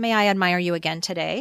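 ordinary talk

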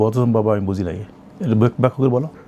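usual speaking voice

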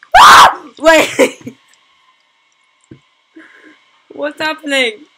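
very high, very loud, shrill, drawn-out screaming. Playing a game never played before, screaming. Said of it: "I know I'm screaming and stuff".

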